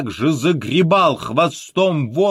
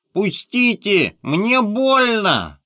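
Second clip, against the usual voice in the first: talking through the nose; 5 semitones higher than usual. Reading the tale aloud, the narrator voices the little elephant: speaking through the nose. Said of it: "и он сказал в нос, вот так".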